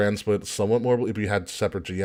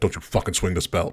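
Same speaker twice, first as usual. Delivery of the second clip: put-on whisper, lower; 3 semitones lower than usual. Imagining what was said to a wrestler about his belt: imitating Triple H whispering. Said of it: "Triple H probably whispered to him".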